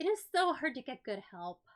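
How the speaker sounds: put-on loud, exasperated, eye-rolling put-upon kid voice. Voicing a kid who rolls her eyes: exasperated kid character. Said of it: "She rolls her eyes and she says".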